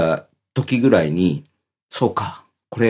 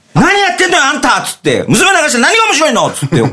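mock-furious angry blow-up, much higher pitched; 4 dB louder than usual. Retelling how the speaker's wife lost it when the daughter cried, retelling an angry outburst. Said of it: "本当に切れちゃった".

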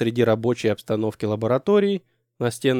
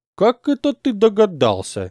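sneering, snide, mocking, pitched-up tone; 8 semitones higher, 3 dB louder than usual. One man answers another's correct guess, with a snide question. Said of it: "ехидно спросил Костя".

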